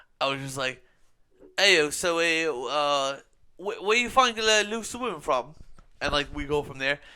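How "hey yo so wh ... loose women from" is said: loud, drunken-sounding, bad put-on British accent. Retelling how he convinced someone he was from London, in a shitty British accent. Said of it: "with my shitty British accent".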